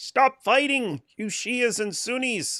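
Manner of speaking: very high pitch, slow pace. Acting out a line after being asked to say it: Jordan Peterson voice. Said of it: "say this like Jordan Peterson".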